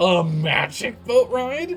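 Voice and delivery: put-on very drawn-out, thrilled, high, excited amazement. Describing the game character's rare burst of energy, the player imitates him sounding excited. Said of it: "the most energy I've felt".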